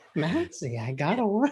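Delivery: put-on child sounding like a little old grandma. Listener repeating a girl's quoted line: imitating Seneca's old-grandma voice. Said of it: "Why does Seneca sound like an old grandma?".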